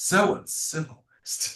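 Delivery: quiet muttering under the breath. Voicing a character muttering at bad table manners: muttering under his breath. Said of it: "says under his breath".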